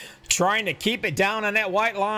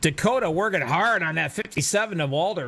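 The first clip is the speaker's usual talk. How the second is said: ordinary delivery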